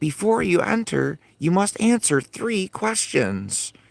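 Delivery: tiny, little, very high-pitched elf voice. Recounting a story, the speaker voices an elf at the gate in a tiny elf voice. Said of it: "he comes up in this little tiny voice".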